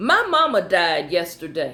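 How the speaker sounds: ordinary talk, nothing marked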